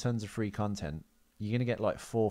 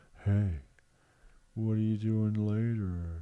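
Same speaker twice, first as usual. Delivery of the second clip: imitated slow, weird half-speed speech. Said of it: "really slow and weird".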